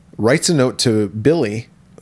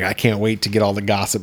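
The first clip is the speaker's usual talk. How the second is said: ordinary talk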